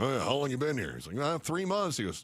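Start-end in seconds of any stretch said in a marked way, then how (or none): 0.0-0.9 put-on big, booming voice. Retelling what Mike McConnell said at the front desk, in his big booming voice. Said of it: "big booming voice".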